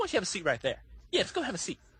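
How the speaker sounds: animated, swooping singsong, up and down. Retelling a TV sting where a man is told to sit: imitating Chris Hansen. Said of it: "every time he says this, he goes".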